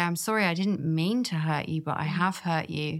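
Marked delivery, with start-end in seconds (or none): none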